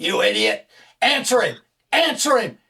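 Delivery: screaming, rising in pitch. Retelling a producer's outburst during a broadcast: imitating Frank screaming. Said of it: "Frank starts screaming at me".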